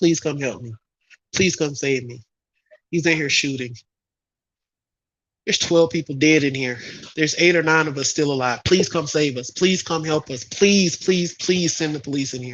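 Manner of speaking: mock desperate pleading tone. Imagining a child hiding in a closet calling 911, imitating desperate begging. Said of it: "begging for their life".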